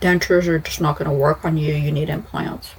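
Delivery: ordinary delivery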